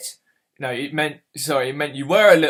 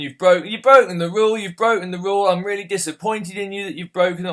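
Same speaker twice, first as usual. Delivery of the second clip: furious, disappointed, repetitive scolding; 5 semitones higher than usual. Retelling a father coming down hard on him: imitating a furious father. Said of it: "was just absolutely furious".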